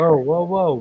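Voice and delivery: ordinary talk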